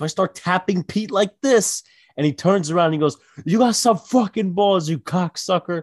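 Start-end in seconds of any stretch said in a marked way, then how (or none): 3.4-5.8 play-acted enraged, furious screaming curse. Speaker retells a manager screaming at someone in their group, retelling a manager screaming. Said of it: "And he's just screaming at him".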